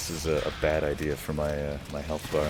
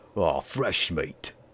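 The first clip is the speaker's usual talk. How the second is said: put-on monster voice, slower. Suggesting how to voice a line, the speaker demonstrates a Pudge voice. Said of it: "Just do a Pudge voice".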